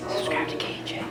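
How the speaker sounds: soft, whispered ghost voice.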